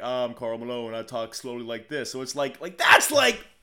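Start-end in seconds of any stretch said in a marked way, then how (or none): none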